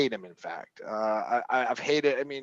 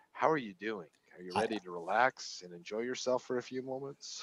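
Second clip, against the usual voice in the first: smooth, sultry, seductive voice; 2 semitones lower, 10 dB quieter than usual. Imitating another speaker's soothing podcast-style greeting: imitating Tim's sultry voice. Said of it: "and his sultry".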